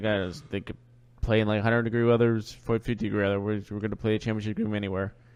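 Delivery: flat, emotionless robotic monotone, droned without feeling. Quoting a coach's pregame answer about the weather: Bill Belichick voice. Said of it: "In a classic Belichick, Belichick voice, where he shows no emotion like a robot".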